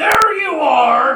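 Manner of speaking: very loud, very high hollered shout, "are" stretched. Game master voicing someone shouting down the alleyway at the players: loud shout. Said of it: "As a loud voice, louder than even the guy who ate a fucking star earlier, shouts down the alleyway".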